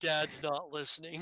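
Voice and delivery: ordinary talk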